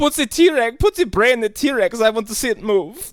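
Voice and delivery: very high-pitched fake German accent. Riffing with others about a movie: Uwe Boll impression. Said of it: "that's not even the real Uwe Boll".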